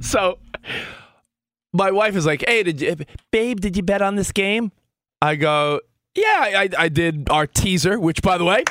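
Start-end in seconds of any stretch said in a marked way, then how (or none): 2.5-4.7 put-on Southern woman's voice and accent. A man quotes his wife, who is from the South, imitating his Southern wife. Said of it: "my wife's from the South".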